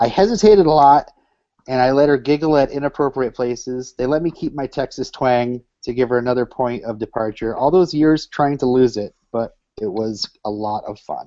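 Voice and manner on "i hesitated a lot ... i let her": usual speaking voice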